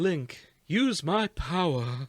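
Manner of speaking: plummy, refined voice. Showing a player how Prince Sidon should sound, soft, posh Prince Sidon voice. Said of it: "I said soft and posh".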